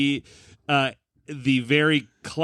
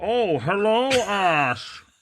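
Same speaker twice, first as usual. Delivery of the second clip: high put-on German accent, one word drawn out; 6 semitones higher than usual. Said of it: "He's German".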